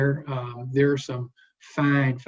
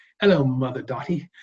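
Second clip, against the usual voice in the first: put-on speech in a Liverpool accent. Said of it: "that Liverpool accent".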